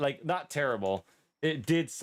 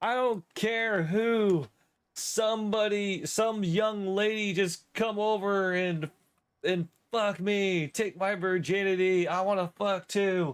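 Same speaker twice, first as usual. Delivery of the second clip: mock drunken yelling, much higher, slower; 7 semitones higher than usual. Telling a story about a man yelling into his town's intercom, retelling a drunk yell. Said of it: "he yells into the intercom".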